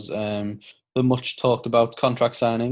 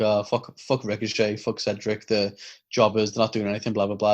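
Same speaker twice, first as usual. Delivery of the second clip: normal talking voice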